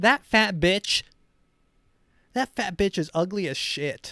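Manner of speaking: mock furious, loud, shrill country-mom ranting voice. Acting out a pageant mom complaining in the car: imitating an angry country mom. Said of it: "their mom's like".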